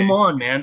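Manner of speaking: put-on, taunting, mocking little jeer. Voicing a paladin taunting an enemy after a charge: mocking taunt. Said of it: "just a mocking thing".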